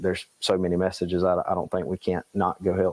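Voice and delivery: ordinary talk, nothing marked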